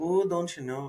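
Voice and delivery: put-on Minnesota accent with long o's. Demonstrating the regional accent just discussed, Minnesotan accent with long O's. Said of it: "like long O's".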